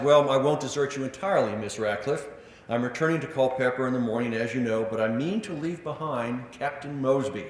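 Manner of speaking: ordinary talk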